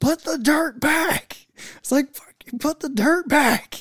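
mock, shrill, very high, full-throated, drawn-out scream. Retelling a Minecraft game where buddies took the dirt, retelling a scream. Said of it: "I start screaming at the top of my lungs".

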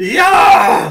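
put-on rowdy, very high, loud, shrill drunken whoop. Telling a story about drunk hooligans, imitating drunk hooligans' cheer. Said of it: "you hear the hooligans go".

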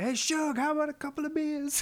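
mock very high, casual shout. Retelling a cartoon scene where a neighbour calls to his wife: imitating Dale shouting. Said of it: "he shouts at his wife".

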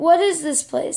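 plain

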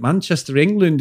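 plain

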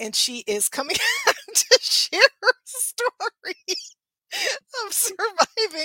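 high, giggly laughing through the words.

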